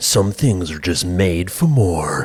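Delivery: deep American commercial announcer voice. Calling a commercial cliched, the speaker reads its line in a deep American ad voice. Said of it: "the deep American voice".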